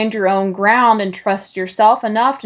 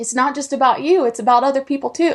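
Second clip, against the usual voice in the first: on the verge of crying, choked up; 4 semitones higher than usual. A guest tells their past self what matters, about to cry. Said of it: "I'm sorry I'm about to cry".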